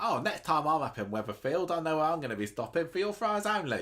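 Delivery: clumsy put-on Cockney accent. Imagining a seller talking to Cockneys about his fries: bad Cockney accent. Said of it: "my accent not as good as".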